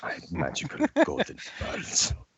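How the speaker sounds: whispered put-on character voice. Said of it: "You cannot do that voice quite right".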